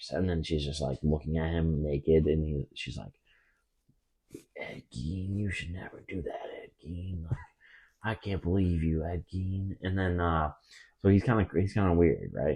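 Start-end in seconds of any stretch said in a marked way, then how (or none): 4.6-9.8 put-on Wisconsin mom accent. Retelling what the mom said to Ed Gein: Wisconsin accent. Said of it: "It's a good Wisconsin accent".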